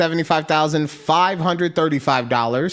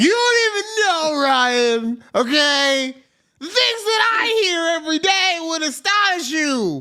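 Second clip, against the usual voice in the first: play-acted indignant angry woman voice, very high, drawn out; 11 semitones higher than usual. Imagining angry women answering his comment: imitating angry women. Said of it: "fifteen angry women like".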